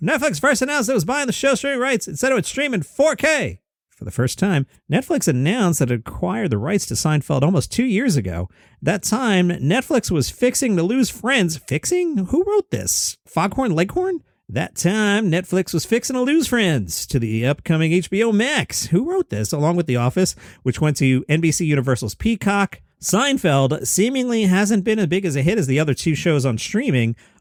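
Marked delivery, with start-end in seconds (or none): 0.0-19.5 high, angry stand-up comic rant. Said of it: "I'm gonna slip into Angry Jerry here".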